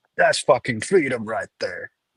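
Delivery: ordinary delivery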